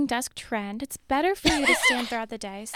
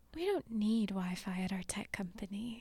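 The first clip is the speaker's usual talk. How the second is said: quiet, calm, unbothered whisper; 4 semitones lower, 11 dB quieter than usual. Joking about a CEO's cutbacks, imitating Mark Hurd whispering calmly. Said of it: "He's whispering it calmly".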